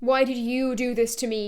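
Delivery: ordinary talk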